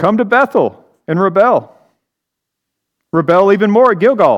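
lightly sarcastic reading. Reading God's words aloud to listeners: with a hint of sarcasm. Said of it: "read this with a hint of sarcasm".

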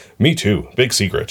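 plain

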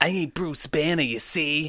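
put-on comic-book villain Jersey accent. Acting out a comic-book villain's line, the speaker uses a jersey villain accent. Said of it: "villains have Jersey accents".

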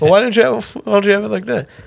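put-on muffled voice like speaker audio. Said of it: "that's what it would sound like".

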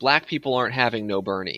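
usual speaking voice

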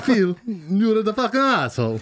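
put-on Italian accent throughout. Repeating a crude line on request, now in an italian accent. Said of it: "but with an Italian accent".

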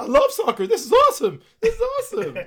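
shrill, squeaky, very high and loud yelp. Retelling a man at a Galaxy soccer game, in his squeaky voice. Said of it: "With his squeaky voice".

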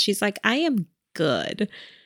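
deeply contented tone. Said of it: "she's living her best life right now".

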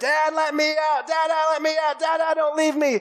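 put-on very high shrieking little kid scream. A dad retelling his son's timeout, imitating Gideon screaming. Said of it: "he was kicking and screaming and yelling".

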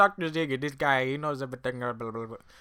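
horribly done fake Indian accent. Telling a story about a man, in a horrible Indian accent impression. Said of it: "That's my horrible Indian impression accent".

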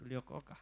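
mock deflated voice, dropping and unenthusiastic. Retelling what people said when asked what happened, mimicking a dropped, unenthusiastic voice. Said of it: "Like the voice dropped. Not the enthusiasm they had anymore".

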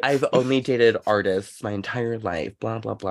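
ordinary talk, nothing marked

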